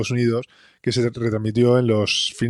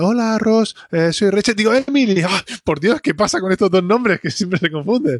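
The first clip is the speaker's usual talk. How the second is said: imitated British accent, pitched higher; 9 semitones higher than usual. Retelling how Rachel re-records Emily's message: imitating Emily's accent. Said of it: "se pone a imitar la voz de la voz y el acento de Emily".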